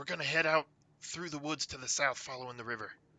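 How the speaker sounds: hushed whisper. Whispering in character after a departing companion named Bart: whispering after someone leaving. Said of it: "I'm just gonna whisper after Bart".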